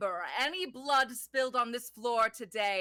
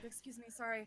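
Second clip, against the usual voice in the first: hushed, quieter voice; 12 dB quieter than usual. Voicing characters slipping past a group: quiet.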